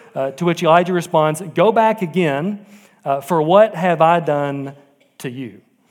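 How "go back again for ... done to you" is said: plain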